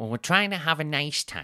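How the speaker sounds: put-on voice, high and sing-song. Retelling what a partner said in a bar, in a Sophie voice. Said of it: "this is the voice I do for Sophie".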